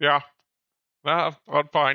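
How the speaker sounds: muffled mumble through a mouthful of food. A character, asked by another if she's okay, answers talking with mouth full. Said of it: "As with a mouthful of tuna".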